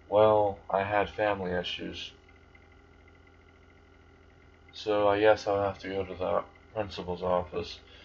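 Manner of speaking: slow, flat, emotionless monotone voice. Narrator voicing a boy replying to a girl at the gate, flat monotone. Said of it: "with a monotone voice".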